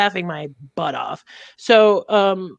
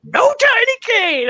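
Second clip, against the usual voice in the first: mock scream, much higher, slower. Pretending to be an old man with their kid, re-enacting own scream. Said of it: "I was like screaming in the bathroom".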